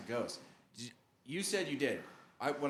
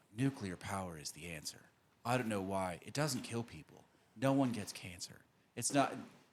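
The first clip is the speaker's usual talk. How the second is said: put-on low, soft, serious voice, pitched lower; 5 semitones lower than usual. Imitating Oliver Stone making his point on a podcast: Oliver Stone impression, dropped soft voice. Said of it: "except this was Oliver Stone".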